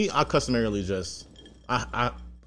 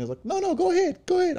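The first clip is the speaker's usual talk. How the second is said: put-on woman voice, much higher. Telling a story about people holding a door, quoting them: put-on woman voice. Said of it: "Your woman voice, by the way".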